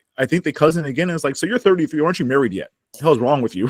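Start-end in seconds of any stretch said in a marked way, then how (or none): none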